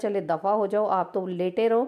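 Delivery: ordinary talk, nothing marked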